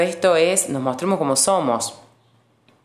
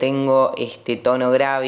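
ordinary talk, nothing marked

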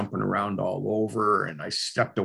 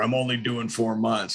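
yelling; 3 semitones higher than usual. Retelling yelling at a mother as she ran out: retelling a yell. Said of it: "And I yelled at her".

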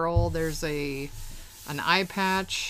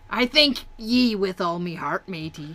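loud, put-on swashbuckling pirate captain voice; 2 semitones higher, 6 dB louder than usual. Reading out a pirate's saved dialogue for a voiceover reel: pirate voice. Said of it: "so here he says".

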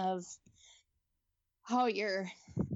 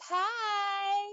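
high-pitched yelled word. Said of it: "She'd be like".

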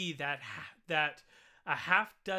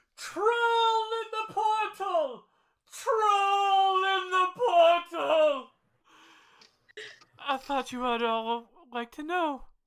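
very loud, very high, drawn-out alarmed yell; 14 semitones higher, 8 dB louder than usual. Game master voicing a man who jumps down among the adventurers: yelling out. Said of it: "he starts yelling out".

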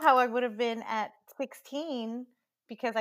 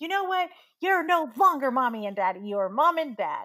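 mad, angry, fed-up outburst; 2 semitones higher, 3 dB louder than usual. Retelling telling parents off after getting mad: imitating own angry outburst. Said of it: "I got mad at him once".

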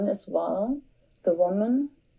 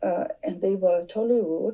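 ordinary delivery

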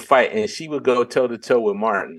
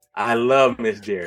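normal talking voice

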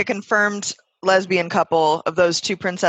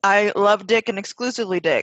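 normal talking voice

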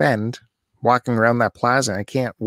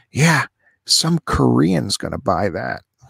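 imitated whisper. Retelling what he said after sidling up close: imitating a whisper. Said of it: "he sidles up enough to whisper".

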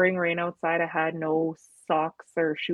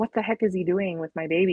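put-on panicked, freaking-out voice. Retelling staring at the dark house: imitating own past panic. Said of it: "I was freaking out".

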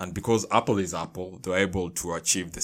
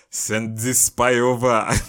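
loud, terrible, put-on Russian accent; 5 semitones higher, 8 dB louder than usual. Speaker imagining what the Russians said, in a put-on Russian accent. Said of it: "[name]'s Russian accent".

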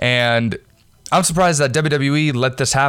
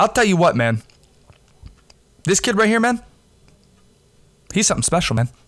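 hyping commentator voice, pitched up; 6 semitones higher than usual. Doing an impression after praising a wrestler's entrance: John Gruden impression. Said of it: "That's my John Gruden impression".

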